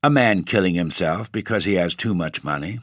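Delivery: ordinary delivery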